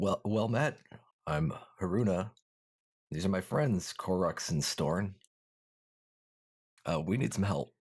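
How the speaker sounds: hoarse, faltering delivery. Narrator voices one of three strangers addressing the players, raspy Haruna voice. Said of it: "says in a uh, raspy voice".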